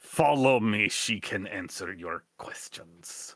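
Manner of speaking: gruff, low, growling voice. Telling a story, voicing a man who won't answer questions; retold growl. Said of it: "He just growls out a".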